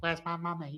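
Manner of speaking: put-on squeaky voice leaning heavily on the Essex accent. Mocking David Beckham by imitating him asking for his mummy. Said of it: "David Beckham is like".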